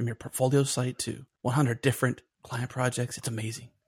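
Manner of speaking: poor, unconvincing attempt at whispering. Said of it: "You're not very good at whispering".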